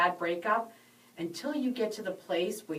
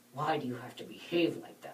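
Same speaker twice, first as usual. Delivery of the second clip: acted scornful, disgusted, contemptuous scolding tone; 6 semitones lower, 5 dB quieter than usual. Retelling how her husband reacted to her excitement, imitating husband's contemptuous tone. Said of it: "he had this contempt in his voice".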